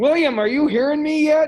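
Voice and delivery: shrill, very loud, high-pitched yelling. Checking whether William can hear through the computer, yelling at the computer. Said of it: "I'm yelling at the computer".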